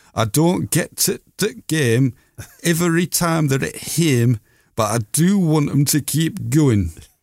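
Yorkshire dialect voice. Quoting a miner's words as a 1924 newspaper printed them: Yorkshire dialect accent. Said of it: "this accent is because it's written like this".

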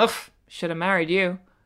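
mock loud voice. Retelling what an ex said at a party: imitating someone saying it loudly. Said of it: "quite loudly in mixed company".

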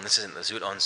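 ordinary talk, nothing marked

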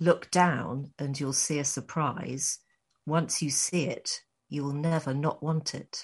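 mock-sultry, very serious. Quoting a woman in a movie trailer, the speaker retells her line: serious, sultry. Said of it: "in a very very serious, sultry way".

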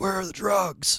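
feeble attempted breathy, whispered superhero voice. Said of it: "the Bale impression tonight".

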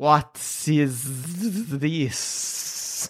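whispered, hushed, breathy snake voice. Storyteller voicing a swaying snake, in a talking snake voice. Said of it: "and then you hear it say".

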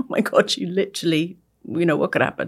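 mock-tearful, imitated crying voice. Retelling a crisis on live television, the speaker acts out crying afterwards. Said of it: "and then afterwards crying".

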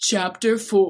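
dramatic, theatrical reading voice. Showing how the chapter number should be announced, in a dramatic voice. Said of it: "You have to go like".

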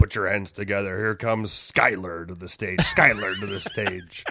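loud club MC announcer voice. Performing a strip club announcer bit when asked for one: strip club announcer voice. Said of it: "give us one".

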